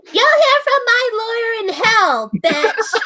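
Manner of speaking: very high, obnoxious, entitled rude-customer voice. Snapping back after being called a bitch, in an entitled rude customer voice. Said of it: "I do that voice a little too well".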